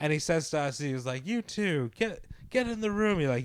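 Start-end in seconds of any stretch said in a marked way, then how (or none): 1.3-3.2 mock high-pitched barked yell, stumbling on get. Retelling being ordered into the room: imitating someone yelling. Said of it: "yelled at us".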